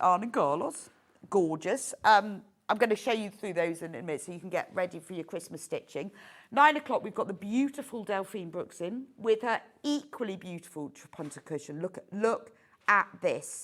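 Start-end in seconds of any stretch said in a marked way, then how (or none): 0.0-0.9 name said the Swedish way, put-on Swedish accent. A presenter listing fabric designers says one name in a Swedish accent. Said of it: "You have to say that in a Swedish accent".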